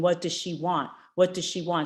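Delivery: normal talking voice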